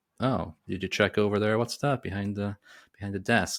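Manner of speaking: ordinary talk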